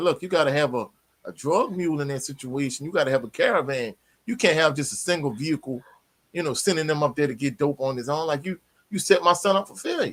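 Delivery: ordinary talk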